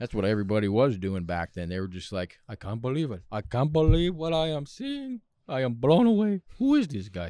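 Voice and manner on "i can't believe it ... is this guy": put-on Yiddish-inflected accent.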